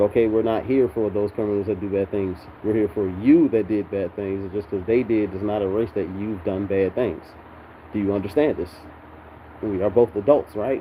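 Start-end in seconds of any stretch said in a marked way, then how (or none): none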